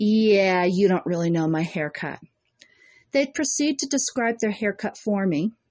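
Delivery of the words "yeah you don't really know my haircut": condescending, talking-down, know-it-all voice. Retelling how a customer in the chair answered: imitating a condescending customer. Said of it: "look at me condescendingly and say".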